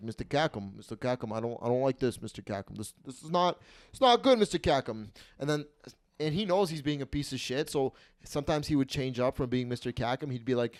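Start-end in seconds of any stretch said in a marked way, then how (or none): 0.0-5.1 animated, repeated griping with swooping pitch. Retelling the owner losing at slots, imitating the owner. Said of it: "He's like".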